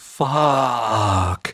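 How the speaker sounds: word drawn out and stretched. Reading a story aloud, a character reacts to news: drawn-out word. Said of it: "Max drew the word out".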